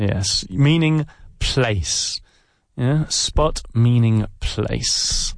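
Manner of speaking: very slow, unhurried delivery.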